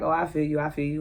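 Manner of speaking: plain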